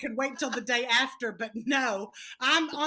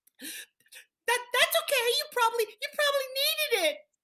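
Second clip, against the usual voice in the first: put-on very high little girl voice, holding back tears; 12 semitones higher than usual. Retelling a little girl's reply about her eaten candy: imitating a girl holding back tears. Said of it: "you can see she wants to cry".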